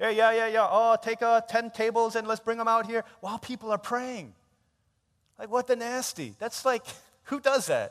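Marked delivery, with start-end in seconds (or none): 0.7-4.3 mock loud talking chatter, pitched higher. Complaining about people moving tables during prayer, imitating loud talking. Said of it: "they were talking loudly".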